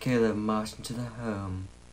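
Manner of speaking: mimicked sad narrator voice. Watching along, the speaker imitates how the narrator reads, mimicking a sad narrator. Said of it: "Like, sad".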